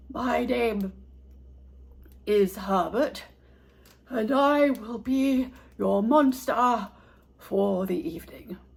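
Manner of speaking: breathy, deep voice. A narrator reads the substitute monster introducing himself, in a low, breathy voice. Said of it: "said a low, breathy voice".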